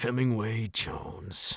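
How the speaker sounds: low, throaty, breathy, whispered growl. A father, ignoring his child's protest, says the child's full name in a low throaty growl. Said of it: "in that low, throaty way".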